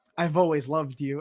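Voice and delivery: ordinary talk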